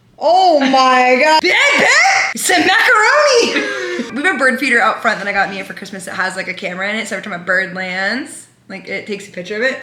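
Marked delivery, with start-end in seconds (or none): 0.2-4.2 put-on excitement, very high, loud, and drawn out. Imitating Mia watching the penguin live cam: imitating Mia when excited. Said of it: "this is my impression of Mia when she's excited".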